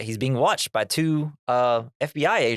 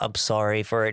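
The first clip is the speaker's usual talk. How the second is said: put-on meek mumble, lower pitch; 2 semitones lower than usual. Speaker acting out how Fox talked in a story, imitating Fox's meek mumble. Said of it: "he's like all like meek... he's like mumbling".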